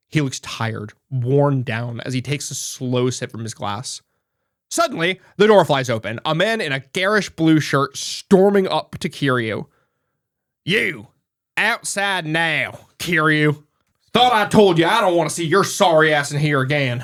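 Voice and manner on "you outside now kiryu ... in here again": put-on Southern American accent. A man storms through the door to confront someone, southern accent. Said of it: "So the southern accents have come back".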